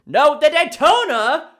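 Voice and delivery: loud, shrill, very high shouted yell. Picking a race from a list and correcting the first answer: yelling. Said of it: "Sorry for yelling".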